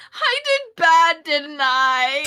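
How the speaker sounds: loud, drawn-out, sobbing lament. Retelling Lena lying face down on her bed, saying this very loud to no one. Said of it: "very loudly says to no one in particular".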